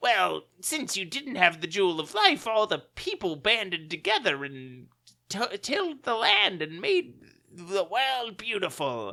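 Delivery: high, swooping cartoon supervillain voice. A speaker quotes what a character said, in a cartoon Batman villain voice. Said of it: "he's still got a cartoon Batman villain voice".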